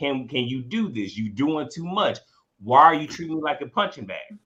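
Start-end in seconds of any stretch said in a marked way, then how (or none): none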